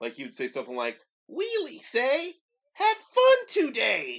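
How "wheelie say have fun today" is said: very high, loud, shrill, drawn-out, swooping backwards cartoon voice. Describing an annoying sidekick, imitating his high-pitched, backwards-talking voice. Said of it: "in like a really high pitched voice and backwards".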